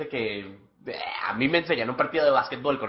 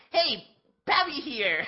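very high, squeaky, pitched-up voice; 13 semitones higher, 3 dB quieter than usual. Doing an impression of Pavi's greeting. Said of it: "Me toca invitar a, a Pavi".

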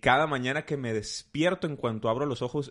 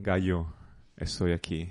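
put-on deep grave voice, lower; 5 semitones lower than usual. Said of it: "profunda, así como".

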